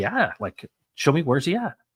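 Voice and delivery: put-on childlike voice of a six-year-old. Retelling a six-year-old answering a pastor in church: imitating six-year-old Steve. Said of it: "he literally said it like that".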